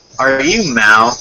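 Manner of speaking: plain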